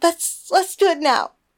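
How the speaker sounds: slow, high-pitched, pleading, begging tone. Elone answers Mary after Mary kisses her again, pleading. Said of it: "Elone pleaded".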